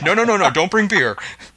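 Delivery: play-acted nervous, high, rushed string of no's. Retelling how Burton reacted last week to the beer suggestion, imitating nervous Burton. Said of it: "Burton got all nervous".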